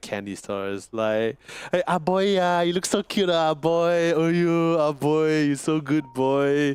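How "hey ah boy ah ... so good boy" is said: slow, cooing, doting auntie voice. Speaker compares a pet's greeting to how aunties talk: imitating an auntie talking to a kid. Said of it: "like how an auntie usually talks".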